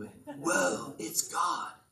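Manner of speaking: surfer-dude voice from California. Explaining the fear of the Lord, saying it in a California surfer voice. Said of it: "I sound like a surfer from California".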